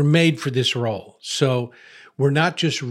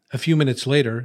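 normal talking voice

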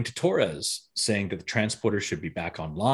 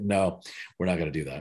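put-on deadpan voice, lower pitch; 4 semitones lower, 4 dB quieter than usual. Retelling a scene, imitating Chakotay refusing: deadpan Chakotay impression. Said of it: "he's so deadpan that he's like".

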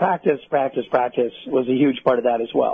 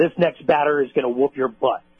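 ordinary talk

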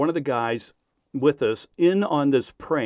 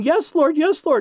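put-on, high shouted cry; 5 dB louder than usual. Telling how everyone in the room overheard a man, retelling someone shouting. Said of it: "he was shouting".

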